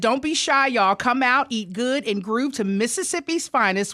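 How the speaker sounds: usual speaking voice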